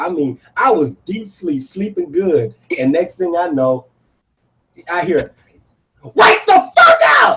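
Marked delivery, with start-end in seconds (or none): 6.0-7.4 very high, shrill, loud cursing scream. Retelling how a partner woke them up: imitating someone yelling. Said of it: "she just yelled and cursed me out".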